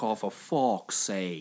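low voice, every vowel stretched and over-enunciated. Asking whether the other speaker copied a woman's reaction, with an over-enunciated vowels impression. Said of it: "you nailed her impression?".

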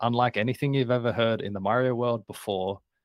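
ordinary talk

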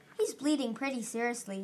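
plain

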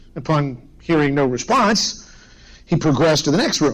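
ordinary talk, nothing marked

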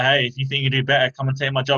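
dripping, snide, challenging sarcasm. Retelling what a coach would say to a parent: imitating a sarcastic coach. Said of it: "in a real sarcastic way".

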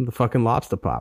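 Boston-accented delivery. Asked by the other speaker to talk in a Boston accent: Boston accent. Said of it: "Talk in your Boston accent".

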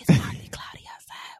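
nasty, breathy whisper. Showing how he whispered in the ear: imitating a nasty whisper. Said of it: "like a good nasty whisper".

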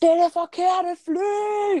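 shouting. Speaker retelling shouting to an older brother from a plane seat: retelling a shout. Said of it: "råber jeg bare".

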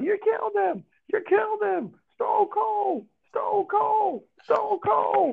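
very high-pitched wrestling announcer style yell. Describing a wrestling kick, the speaker pictures the announcer jumping in: Jim Ross announcer yell. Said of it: "jump out and just yell".

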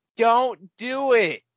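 very high, shrill shriek. Retelling how someone in the crowd reacted: imitating a scream. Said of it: "someone in the crowd just screams".

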